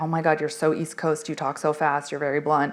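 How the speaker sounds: ordinary delivery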